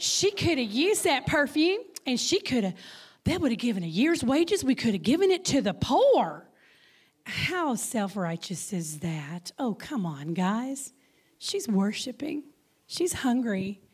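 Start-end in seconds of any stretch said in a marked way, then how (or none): 0.0-6.5 put-on Texas accent, swooping and sing-song. Speaker voices the disciples' objection in a put-on Texas accent. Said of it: "I'm using my Texas accent now".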